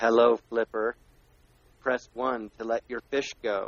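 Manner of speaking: robotic, recorded-sounding voice. Retelling a strange phone recording, imitating its robot voice. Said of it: "a recording that was like a robot voice".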